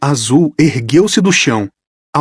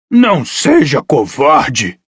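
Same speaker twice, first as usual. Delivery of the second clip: swooping hiss, words pushed out. Reading a story aloud, a monster urging a boy: hissing. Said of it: "sibilou o primeiro Teuquine".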